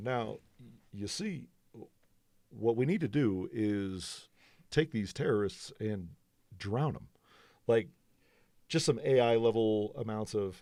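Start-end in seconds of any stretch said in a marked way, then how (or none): 0.0-7.1 lowered, deepened voice with speechmaking rhythm. Imitating a man's speaking cadence in a lowered voice. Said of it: "if I pull his cadence out, like uh, maybe maybe lower my voice a little bit. Be like".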